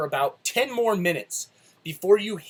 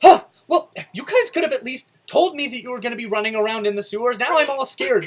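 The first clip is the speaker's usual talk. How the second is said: flustered, frazzled, high-pitched raised voice; 5 semitones higher, 5 dB louder than usual. Voicing a frazzled bookstore owner who ran downstairs: frazzled woman's voice. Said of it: "a very frazzled woman come running downstairs".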